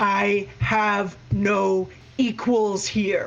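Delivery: ghostly spirit voice, pronouncing tone. A presence in the house booms inside the players' heads: loud booming voice. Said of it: "very, very loudly booms in your heads".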